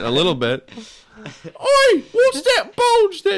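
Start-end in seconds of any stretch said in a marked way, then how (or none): 1.2-3.4 squealed out slowly and shrilly. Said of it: "does sound like a Monty Python sketch".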